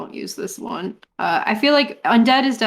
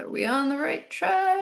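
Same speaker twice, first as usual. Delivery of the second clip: soft, slow mutter under the breath; 8 semitones higher, 5 dB quieter than usual. In a role-play game, a character speaks to Vaughn, under the breath. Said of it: "Say under my breath".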